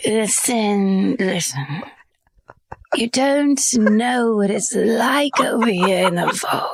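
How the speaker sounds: put-on drunk British accent, tipsy. Speaker decides to play it as a drunk British person, in a drunk British accent. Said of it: "it'd be even better if it was a drunk British person".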